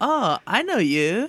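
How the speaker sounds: slow, high put-on French accent. Greeting the mayor in character: French accent. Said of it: "with a French accent".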